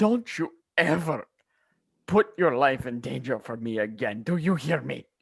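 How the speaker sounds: high, sobbing, scolding, pleading tone through tears. A player's character hugs the two of them, sobbing and screaming. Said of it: "begin sobbing and screaming at them like".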